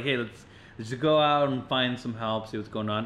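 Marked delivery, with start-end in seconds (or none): none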